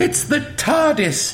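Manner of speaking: very high, thrilled, delighted exclamation. Reading a story, a character sees a time machine appear and cries out delightedly. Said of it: "cried Zoe delightedly".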